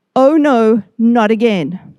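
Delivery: ordinary talk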